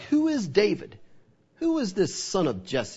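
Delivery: scornful, dismissive, swooping contemptuous sneer. Speaker retelling what a man in a bible story said, mock-contemptuous. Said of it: "Just saying it in a contemptuous way".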